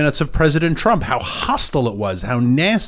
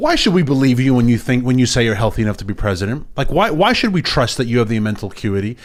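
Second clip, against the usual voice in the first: ordinary delivery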